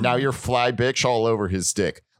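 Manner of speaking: ordinary delivery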